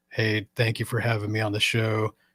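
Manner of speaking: flat monotone dude speak, same volume throughout. Acting out his old self as a show guest, monotone dude speak. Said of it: "Dude speak is same volume, same pitch".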